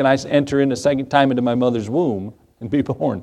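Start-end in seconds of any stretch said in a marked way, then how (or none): none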